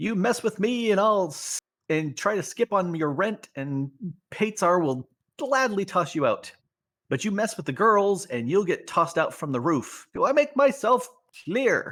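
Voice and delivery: high woman's voice that carries far. Narrator voices a woman heard through an opened door, woman's voice, easily heard. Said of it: "the voice of a woman is easily heard".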